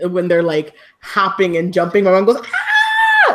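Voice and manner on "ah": loud high-pitched scream. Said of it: "My mom's favorite show to yell at and scream".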